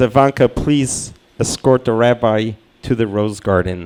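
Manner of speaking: normal talking voice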